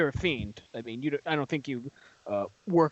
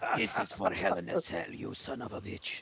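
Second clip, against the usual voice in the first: Russian villain voice, much higher pitch; 4 semitones higher, 8 dB quieter than usual. During a wrestling bit, before the others react: Russian Bond villain accent. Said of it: "has he turned into a Russian Bond villain?".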